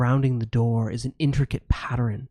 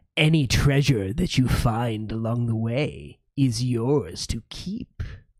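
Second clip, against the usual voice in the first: echoing, mighty archwizard voice. The dungeon's archwizard addresses the summoned heroes inside their minds, in an echoing archwizard voice. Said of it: "And our heroes today have been summoned by the mighty archwizard [name] and Dwarven Forge to invade the [name]. / as the next test subjects for my [name]. / The echoing voice of the archwizard [name]'".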